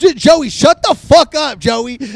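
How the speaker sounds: mock pissed-off, fed-up, slow, angry tone. Retelling a friend telling a loud drunk friend to stop: imitating angry friend. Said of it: "Jess is starting to get pissed".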